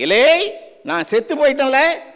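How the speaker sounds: loud, angry shout full of fury.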